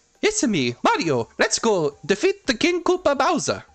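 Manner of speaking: upbeat, high, swooping, sunny sing-song voice. Explaining why the movie voice differs, imitating the cartoon: upbeat Mario voice. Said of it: "keep the upbeat".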